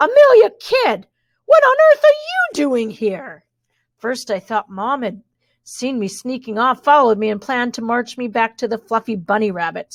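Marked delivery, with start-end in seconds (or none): 0.0-3.4 very high, loud, shrill, whiny, swooping voice. A voice stops amelia kidd in her tracks at the stables, loud, high-pitched, whiny voice. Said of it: "the voice was much too high pitched and whiny".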